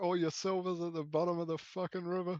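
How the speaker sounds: high, loud hollering as if across a long distance. Playing along, answering a stranger taunting from far away, yelling back. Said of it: "I'll just yell back".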